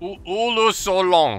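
put-on Italian-sounding accent. Asked to say the phrase, the speaker tries it in an Italian-sounding put-on accent. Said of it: "Why did you sound so Italian?".

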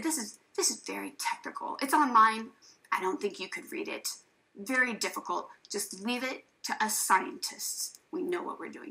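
patronizing, condescending, official know-it-all tone. Retelling what an official said to a worried parent: imitating a patronizing official. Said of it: "he gave me such a patronizing look and said".

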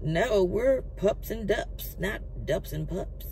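put-on Texas-style country accent. Reading texas restaurant news, speaking as the restaurant in a put-on country accent. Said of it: "that's why I got the country accent".

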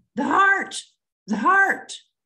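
put-on, high, hollered cry. Telling of a wife calling out from inside the house; retelling a wife hollering. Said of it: "She was hollering".

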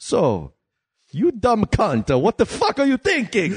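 very high cartoon voice, pitch wildly bouncing and swooping. Acting out Mario interrogating someone under a glaring light: Mario voice. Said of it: "he just looks at it, he goes".

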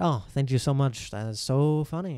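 put-on, mock-grateful, sarcastic tone. Speaker retells her reply to someone who sent her a meme: retelling sarcastic thanks. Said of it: "it's not funny at all".

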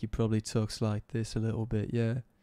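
put-on UK accent. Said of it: "like a U K guy".

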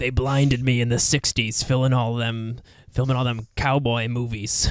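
put-on voice of a very old man. Joking about casting ninety-year-old Clint Eastwood: ninety-year-old Clint Eastwood impression. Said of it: "I want ninety-year-old Clint Eastwood".

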